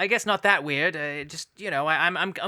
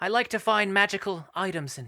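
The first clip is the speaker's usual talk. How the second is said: put-on British adventurer voice; 2 semitones higher than usual. Playing a character in an improv guessing game: Lara Croft voice. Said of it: "I tried my best with the voice acting".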